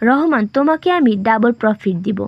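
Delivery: ordinary delivery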